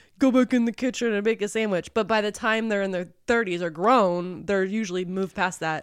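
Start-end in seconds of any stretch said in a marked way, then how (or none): none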